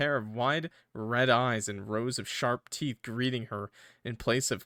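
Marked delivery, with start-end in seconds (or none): none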